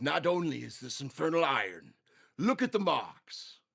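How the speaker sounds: dwarven blacksmith character voice. Voicing the Duergar blacksmith examining a player's armor: Duergar blacksmith voice. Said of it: "he goes".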